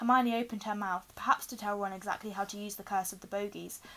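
ordinary delivery, nothing marked

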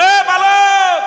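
desperate, high, loud, drawn-out cry.

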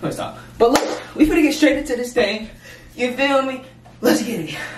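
out-of-breath, winded, breathless hype host patter. Speaker starting a Q&A session, out of breath. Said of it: "I don't even know why I'm out of breath".

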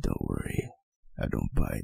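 very low, rough, creaky voice. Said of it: "I feel violated by my own voice".

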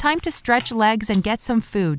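ordinary talk, nothing marked

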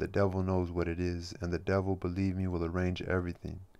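plain

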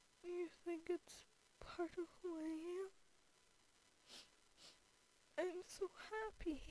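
tearful weeping. After asking someone out and hearing yes, crying. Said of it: "I'm sorry for crying".

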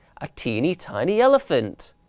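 plain reading voice

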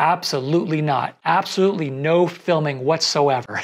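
ordinary delivery

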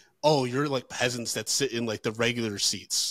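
ordinary delivery

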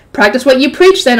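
plain reading voice

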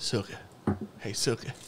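put-on very soft, breathy, whispered Southern accent. Describing an old HBO vampire show, imitating a Southern vampire accent. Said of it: "they're all Southern".

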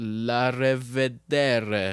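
loud, half-accidental Italian-sounding pronunciation. Signing off the show with a Romanian goodbye, said in an Italian accent. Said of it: "I don't know why I'm saying it like an Italian".

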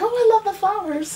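very high, all-excited gushing voice. Retelling meeting a woman at a craft show: imitating someone all excited. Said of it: "she was like all excited".

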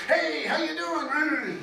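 high, slow, hearty, gregarious and happy jovial voice.

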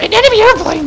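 high, loud, eager helper voice.

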